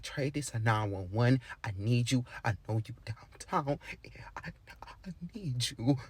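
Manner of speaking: mock, very quiet, hushed voice that cracks and breaks. Retelling a caller asking to be picked up, imitating a breaking voice. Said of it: "like her voice breaking".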